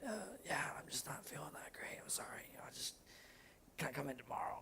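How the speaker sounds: whispered, breathy, put-on sick voice. Recreating calling in sick to work, in a fake sick voice. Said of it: "I did the whole fake voice thing".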